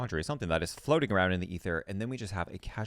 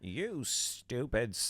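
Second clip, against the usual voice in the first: put-on blunt, cutting, harsh grandma voice; 4 semitones higher, 3 dB quieter than usual. Explaining a self-compassion strategy, voicing what the speaker's grandmother would say, imitating grandmother's voice. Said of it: "my grandmother's voice".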